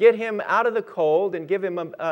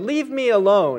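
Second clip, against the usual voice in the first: gruff growl, acted out; 3 semitones higher, 4 dB louder than usual. Telling a story, the speaker retells a man answering a woman's offer, retelling a growl. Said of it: "he growled".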